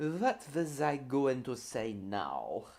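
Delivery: put-on German accent. Wondering aloud what they were about to say: put-on German accent. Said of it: "now I'm talking in a German accent".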